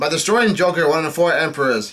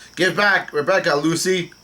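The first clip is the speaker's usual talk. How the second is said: usual speaking voice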